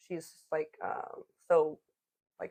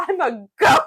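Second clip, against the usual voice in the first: put-on offended voice, higher and louder; 12 semitones higher, 11 dB louder than usual. Retelling a book scene where a character is called a donkey: imitating Grover offended. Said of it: "Grover gets offended".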